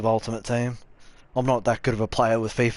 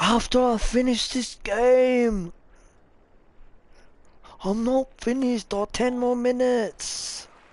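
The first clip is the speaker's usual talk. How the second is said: very high-pitched, slow, drawn-out voice; 12 semitones higher than usual. Acting out a gamer refusing to stop playing, imitating a higher-pitched voice. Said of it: "Obviously in a much higher pitched voice".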